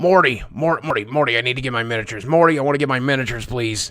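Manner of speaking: stumbling over a name, repeating it repeatedly. After asking if they sounded like Rick, the speaker keeps going in a Rick impression. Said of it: "Did I sound like Rick there?".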